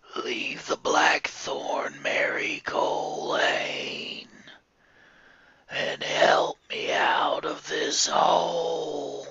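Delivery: eerie creature voice, whispered, very slow. Storyteller voicing the creature calling to Mary Colane from a grave: evil creature voice. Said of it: "Mary knew this was an evil creature. / Mary knew this was an evil creature. She could tell by the clawed fingers hooked in her hair and its terrible breath on the back of her neck. / And again the dea".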